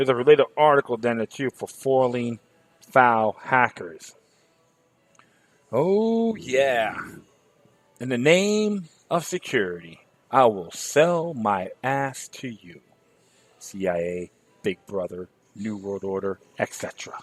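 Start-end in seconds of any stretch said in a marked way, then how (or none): 5.7-12.8 mocking, sarcastic, swooping sing-song. Mocking the agencies' promise of security: mock sarcastic voice. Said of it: "And I'm being sarcastic".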